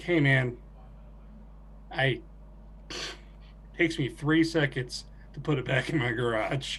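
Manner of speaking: whispered, breathy, dead-level flat deadpan. Retelling a line said deadpan straight into a man's face. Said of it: "I was like deadpan into his face".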